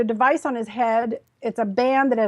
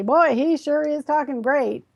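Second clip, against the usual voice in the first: mock, sarcastic tone; 2 semitones higher than usual. Retelling what the woman helping him said: retelling a sarcastic remark. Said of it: "said kind of sarcastically".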